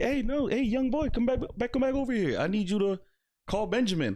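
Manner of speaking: high-pitched yelling, hollering, calling out. Retelling how an old woman called out to come back: imitating someone yelling. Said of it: "she starts yelling".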